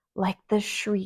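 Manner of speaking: plain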